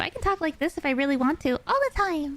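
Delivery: high, head-voice falsetto. Explaining chest voice versus voice up high, demonstrating high falsetto voice. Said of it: "You can use your falsetto if you really want to".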